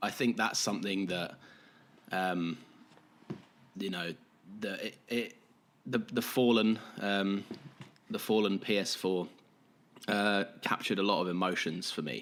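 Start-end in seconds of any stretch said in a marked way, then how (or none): none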